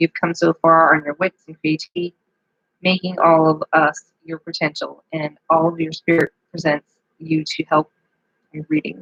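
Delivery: voice catching and breaking, choked up. Giving a reading that gets to you until you can't read anymore, choking up. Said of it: "I'm just like choking up on this".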